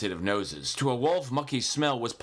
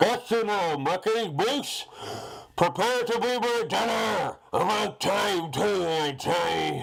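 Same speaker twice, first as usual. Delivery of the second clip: muffled, smothered, pitched-up cry; 6 semitones higher than usual. Narrator reads the wolf, in a gas mask, catching the moose: muffled voice. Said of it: "he cried in a muffled voice".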